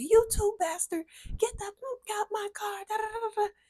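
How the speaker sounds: shrill, very high, furious angry yelling. Retelling a woman yelling at a man from her car, retelling an angry yell. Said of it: "So she's yelling at him".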